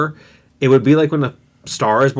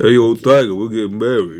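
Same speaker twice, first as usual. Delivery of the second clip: put-on mumbling voice, pitched lower; 4 semitones lower than usual. Mocking how an actor talks in every role: Sylvester Stallone voice. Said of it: "an actor who doesn't talk like this".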